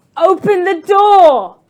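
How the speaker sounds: frantic, very loud, very high desperate yell. Voicing a battered character pounding on a door: desperate. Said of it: "she's pounding on the door desperately".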